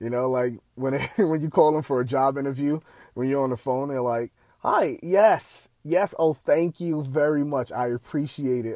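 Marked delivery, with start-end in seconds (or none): 4.6-8.8 put-on polished, proper-sounding voice, very slow, drawn out. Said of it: "that's the voice i put on".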